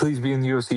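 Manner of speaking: mock, put-on pleading, begging tone. Retelling how fans react at fights: imitating fans begging. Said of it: "begging, begging, screaming at Dana".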